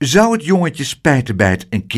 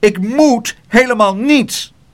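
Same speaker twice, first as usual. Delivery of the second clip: high, indignant, angry yelled outburst; 8 semitones higher, 4 dB louder than usual. The little porter answers Pluk, shouting. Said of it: "Hij schreeuwde".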